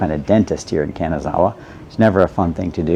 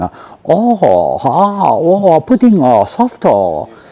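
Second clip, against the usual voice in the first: exaggerated Japanese accent, very high and very slow; 10 semitones higher, 6 dB louder than usual. Mimicking foreigners in Japan, talking in a put-on Japanese accent. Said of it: "talking in a Japanese accent the way a Japanese person speaks English".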